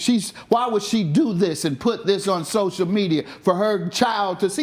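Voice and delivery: ordinary talk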